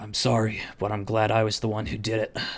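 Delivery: quiet, hushed whisper. Game master voicing a character leaning into a player's ear, whispering. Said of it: "and he whispers".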